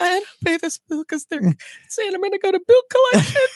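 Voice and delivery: very high, weepy, tearful, acted-out begging tone. Retelling going to a dad about an unpaid bill: imitating own past crying. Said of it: "I remember crying, going to my dad and going".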